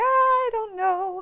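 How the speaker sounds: high, slow, drawn-out clueless voice.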